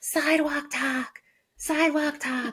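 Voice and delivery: put-on high-pitched scream.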